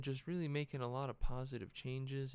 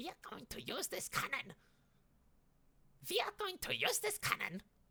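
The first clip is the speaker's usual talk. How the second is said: put-on German accent, very high, swinging; 13 semitones higher than usual. Mid-rant about a German cannon, the speaker does a German accent impression. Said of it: "It's my German impression".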